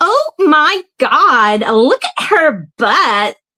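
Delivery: very slow, drawn-out put-on American accent. Trying another American accent line: put-on American accent. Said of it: "I got one".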